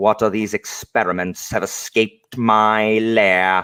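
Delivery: put-on condescending, haughty British accent. Describing a scientist mage villain, imitating a condescending British villain. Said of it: "just so condescending and superior and British".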